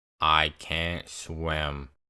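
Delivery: put-on deadpan, low, flat monotone, no inflection. Retelling the story, the speaker quotes Ben's words, in Ben's monotone voice. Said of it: "in the most monotone voice".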